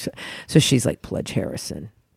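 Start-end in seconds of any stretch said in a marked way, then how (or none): 1.0-1.9 low, breathy, whispered, dropped put-on manly voice. Retelling a prank call to a fraternity pledge: imitating a lowered manly voice. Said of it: "she could lower her voice".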